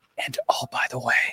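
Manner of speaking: whispered aside, hushed. Discussing a football game's players, suddenly whispering. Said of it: "I don't know why I'm whispering".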